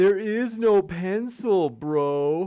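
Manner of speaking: very slow, with bro stretched long. Reading a chat comment aloud in the commenter's voice: impression of Witsit. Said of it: "That's my best impression".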